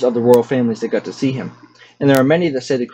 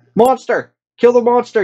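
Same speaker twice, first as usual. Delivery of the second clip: very high scream of sheer terror; 11 semitones higher, 4 dB louder than usual. Reading a story aloud, one of the men yells on seeing the banshee, terrified yell. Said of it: "with sheer terror in his voice".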